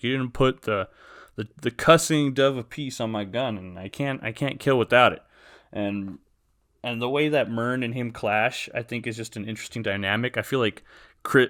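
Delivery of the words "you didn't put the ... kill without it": plain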